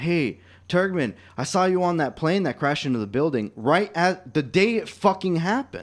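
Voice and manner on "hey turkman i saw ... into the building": jeering call, called out loudly across a distance. Recalling a kid in emergency formation yelling out at him, retelling a kid's yell. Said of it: "a kid yelled out".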